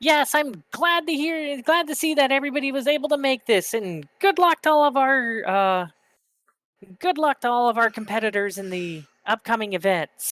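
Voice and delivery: put-on high, squeaky, old gnome voice. An older gnome walks up to the stand and speaks; squeaky gnome voice. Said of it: "Very squeaky voice".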